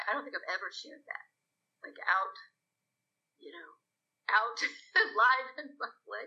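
choked up, on the verge of crying. Speaker shares something personal in public for the first time, about to cry. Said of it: "now I'm about to cry".

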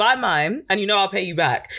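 ordinary talk, nothing marked

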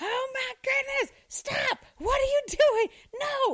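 mock very high, shrill child screaming. Sitting in their office, speaker hears second graders in the bathroom, imitating kids screaming.

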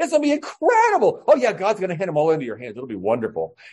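mock, heavily laid-on sarcastic gushing, swooping sing-song. Acting out a man's reply to a pronouncement, imitating thick sarcasm. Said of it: "his sarcasm is so thick".

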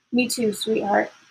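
usual speaking voice

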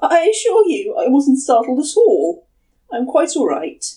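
unnatural, high, squeaky voice throughout. Karamatsu answers the woman who apologized for scaring him, voice squeaking unnaturally. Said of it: "His voice squeaked unnaturally".

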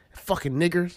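ordinary talk, nothing marked

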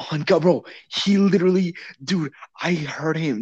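excited outburst.

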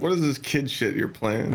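ordinary talk

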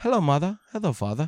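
clumsy, bad, fake put-on English accent. Chatting with co-hosts about accents, trying a bad english accent. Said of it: "But if I did have an accent, I wish it was English".

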